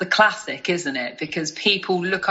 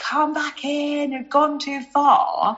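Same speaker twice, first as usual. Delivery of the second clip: play-acted, pitched-up, loud screaming; 8 semitones higher than usual. Recalling a dad running down the beach after a drifting airbed; retelling dad's scream. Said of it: "screaming like".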